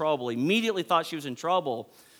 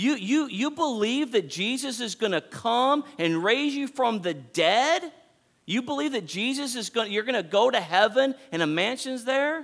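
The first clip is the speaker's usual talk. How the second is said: loud, high-pitched yell with drawn-out "you"; 8 semitones higher than usual. Speaker urging listeners to get up and find hope, yelling. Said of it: "I don't know why I'm yelling".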